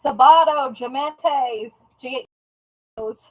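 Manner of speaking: attempted Texan accent. Trying to say some words the way a Texan would, attempted Texan accent. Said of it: "trying to say it like a Texan".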